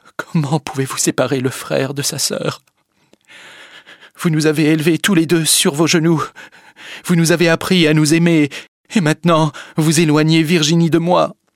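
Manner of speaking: quavering, unsteady, trembling voice, pitched high. Paul turns to Madame de la Tour and answers her; trembling voice. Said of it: "lui a dit d'une voix tremblante".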